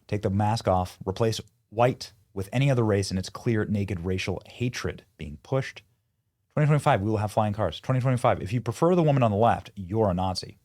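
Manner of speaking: normal talking voice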